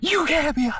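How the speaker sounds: play-acted shrill, very high furious scream. Retelling a man screaming face to face at the speaker: retelling furious screaming. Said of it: "starts screaming in my face".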